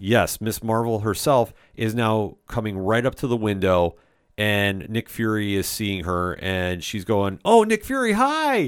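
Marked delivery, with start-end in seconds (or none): 7.4-8.7 play-acted, very high-pitched, excited starstruck gushing. Retelling a trailer scene, quoting a starstruck Kamala Khan: excited fan moment. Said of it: "having a big fan moment".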